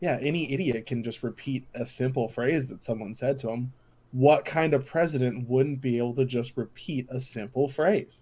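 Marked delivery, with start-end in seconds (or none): none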